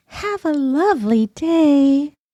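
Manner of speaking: sweetest, sugary high fairy voice, "day" drawn out. In a game scene, the fairy character bids her farewell: sweetest fairy voice. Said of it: "in my sweetest fairy voice".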